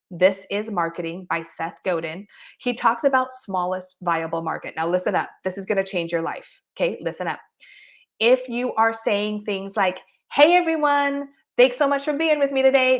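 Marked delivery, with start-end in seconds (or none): 10.3-13.0 rushed, jittery, high, fast, nervous voice. Speaker demonstrates a nervous on-camera greeting, nervous voice, pitched up, fast. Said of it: "Notice my voice is up".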